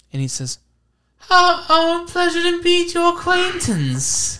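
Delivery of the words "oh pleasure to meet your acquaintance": put-on odd British accent, much higher. Retelling what the armed group's boss says when you meet him; strangely british accent. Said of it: "He has like a strangely British accent".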